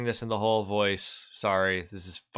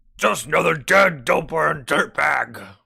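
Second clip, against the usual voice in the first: very loud, slow, rough booming bellow; 6 semitones higher, 8 dB louder than usual. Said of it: "This [name] voice is fucking killing me".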